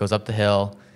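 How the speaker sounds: plain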